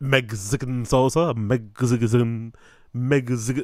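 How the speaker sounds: put-on odd pronunciation. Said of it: "it just sounds very other".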